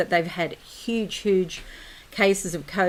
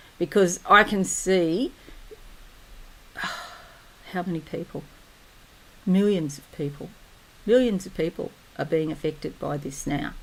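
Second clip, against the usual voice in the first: voice catching on the edge of crying, choked-up. A video creator tells viewers what they are seeing, starting to cry. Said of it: "I'm starting to cry now".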